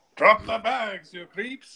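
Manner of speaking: very high, put-on French accent. Tabletop game session, voicing a character chasing looters, put-on French accent. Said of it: "That's the way I talk French".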